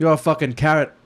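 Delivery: put-on Irish-accented speech. Doing the voice after being told to: Conor McGregor voice. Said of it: "There you go".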